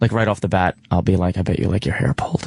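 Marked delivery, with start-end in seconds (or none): 1.4-2.5 low, rough, deep, raspy, creepy voice. Describing the opening line they often use, in a put-on deep raspy creepy voice. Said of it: "in that deep, raspy, creepy voice".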